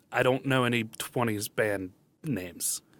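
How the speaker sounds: usual speaking voice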